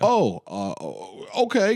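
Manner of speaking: mock, very slow, halting, swooping, a little panicked. Retelling a character's reaction to a psychological test: imitating a panicked character. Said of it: "Clearly, like, a little, uh, panicked".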